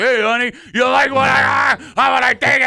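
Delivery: put-on loud, very high, leering, drunken heckling voice. Retelling what drunk fans shouted at cheerleaders: imitating drunk fans. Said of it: "drunken dukes like".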